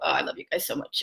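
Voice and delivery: tearful, crying through the words. Responding to viewers who are being sweet, crying while talking. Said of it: "I'm crying with you".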